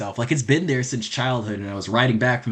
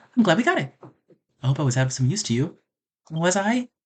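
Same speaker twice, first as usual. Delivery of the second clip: put-on feminine girl's voice; 4 semitones higher than usual. Streamer voicing a game character's lines for his viewers, in a girl voice. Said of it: "You guys don't like my girl voice".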